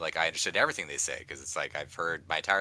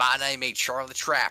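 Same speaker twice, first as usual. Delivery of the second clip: put-on thick Southern accent, higher and louder; 7 semitones higher, 4 dB louder than usual. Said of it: "his accent was a little too thick for me".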